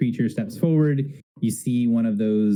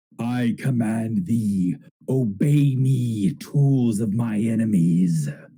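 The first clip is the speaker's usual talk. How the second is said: slow, grand, echoing villain voice filling the room. A narrator voices a command coming from a billowing cloak, great echoing voice. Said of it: "you hear this great echoing voice come around the room".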